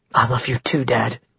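ordinary delivery

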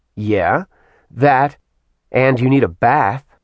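ordinary delivery

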